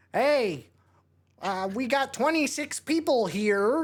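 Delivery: high, slow, drawn-out calling voice. Retelling a small movie role by David Lynch: David Lynch voice. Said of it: "that's David Lynch's voice".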